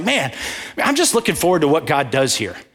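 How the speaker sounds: mock grinning voice with swooping pitch. Retelling what a man sitting in front said out of the blue, imitating a smiling voice. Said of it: "You can hear the smile on his face".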